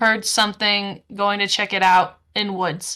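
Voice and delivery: ordinary talk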